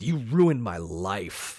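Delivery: drawn-out scream. Recounting a scene where a character screams at a man, retelling a scream. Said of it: "she just screams".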